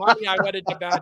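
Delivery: plain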